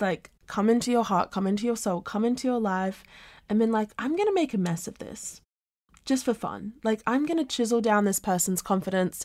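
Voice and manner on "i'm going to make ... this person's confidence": normal talking voice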